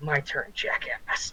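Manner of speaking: hushed, close, menacing whisper in the ear. Game narrator voicing the creature as it stabs a character, whispering. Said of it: "he whispers in his ear".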